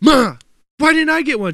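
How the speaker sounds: mock upset, boiling-over outburst, snapping. Retelling a childhood outburst at his mother, mock boiling-over outburst. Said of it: "just boiling over like".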